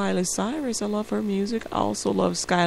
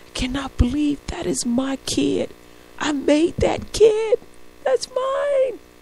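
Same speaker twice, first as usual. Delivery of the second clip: high, drawn-out, tearful wailing blubber; 7 semitones higher, 5 dB louder than usual. Retelling how a father reacted watching his son, imitating him bawling. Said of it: "he's just totally like bawling".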